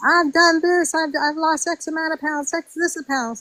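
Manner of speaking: high, mild, toned-down mock yell kept small. Retelling how a contestant announced her weight: imitating someone screaming. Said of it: "She's screaming a narrative".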